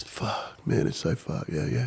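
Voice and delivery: acted, breathy, tearful whisper. Retelling how a footy bloke at the pub reacted: imitating someone crying. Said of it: "started crying".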